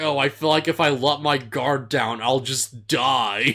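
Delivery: ordinary delivery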